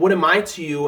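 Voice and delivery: ordinary delivery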